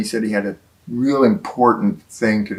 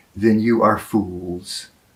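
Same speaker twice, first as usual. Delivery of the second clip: mock grave, very serious, slow, weighty delivery. Retelling the Master's reply to the group, in a very serious voice. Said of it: "he said in a very serious voice".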